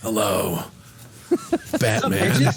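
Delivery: gravelly, rough-edged, ground-out voice. Joking about a swordsman replacing Superman and greeting Batman: gravelly Geralt of Rivia voice. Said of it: "he's got a more gravelly voice than Batman".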